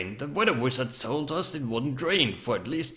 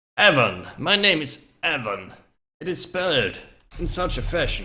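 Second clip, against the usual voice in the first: put-on loud elderly male character voice; 5 dB louder than usual. Role-playing a new character finally giving his name, in an elderly male voice. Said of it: "I can hear an elderly male voice speak out".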